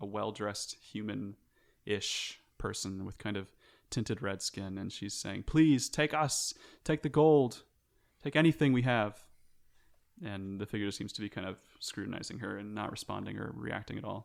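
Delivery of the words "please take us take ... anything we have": high, raised voice, pleading with full intensity. Voicing a woman begging a floating figure over a fiery bowl: pleading. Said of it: "she's pleading to a".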